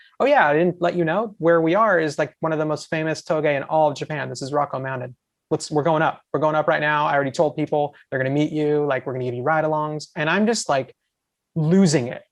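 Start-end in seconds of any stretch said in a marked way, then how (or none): none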